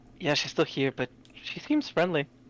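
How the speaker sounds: soft, hushed, secretive half-whisper, in character. Leaning in to answer a character inside a cocoon: in-character half-whisper. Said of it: "whisper into the cocoon".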